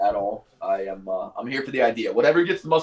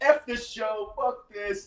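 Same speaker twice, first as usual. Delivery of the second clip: very high, very slow, drawn-out voice, losing control; 11 semitones higher, 3 dB quieter than usual. Retelling an interview where Bob Knight loses his mind: imitating Bob Knight flipping out. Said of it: "flipping out".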